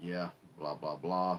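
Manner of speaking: low, flat, bored, unmotivated monotone drone. Showing how unmotivated video makers sound: monotone. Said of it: "you're just more monotone".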